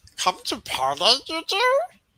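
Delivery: very high, sing-song, swooping goblin voice. The game master answers the players' offer to parley as the goblin: goblin voice. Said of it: "says the goblin as he looks".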